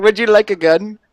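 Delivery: thick fake Indian accent. Playing a shopkeeper offering a gun: put-on Indian accent. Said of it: "Went super Indian on that".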